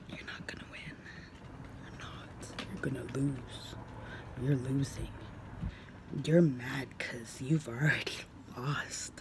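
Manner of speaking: low, soft, whispered defiance. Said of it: "looked at him straight in the face and went".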